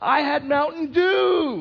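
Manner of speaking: put-on very high, very loud, slow child scream. Retelling how a child stood on the couch, imitating a child screaming. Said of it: "screams at the top of his lungs".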